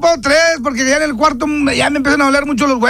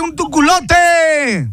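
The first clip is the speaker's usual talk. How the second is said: slow, drawn-out, mocking sing-song delivery. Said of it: "como el tecolote".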